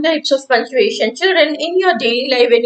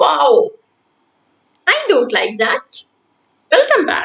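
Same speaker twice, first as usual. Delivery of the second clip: exclaimed, rising and louder at the end. Showing children how an exclamation sounds: higher and louder at the end. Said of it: "Its voice goes higher and louder at the end".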